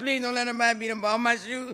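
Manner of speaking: high, sobbing, begging through tears. Speaker acting out her own past words, retelling crying. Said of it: "And I'm just crying".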